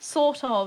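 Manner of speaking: loud British-sounding voice. Repeating a word to another speaker: british accent. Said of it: "Why do you go British when you say that?".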